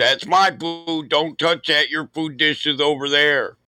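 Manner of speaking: put-on pet voice, mock-angry. Speaker voicing a pet defending its food dish from the cat, voicing Milo's mock anger. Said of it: "and he's getting mad".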